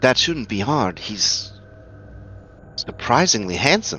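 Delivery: soft whispered aside, close and direct. Voicing a character who confides in a player: whispering. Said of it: "she kinda whispers to you".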